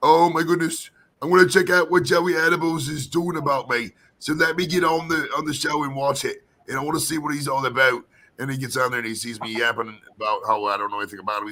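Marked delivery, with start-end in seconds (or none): 0.0-8.0 put-on British accent. Imagining what he would say while checking out the show, in a put-on british accent. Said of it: "I gotta do it in a British accent".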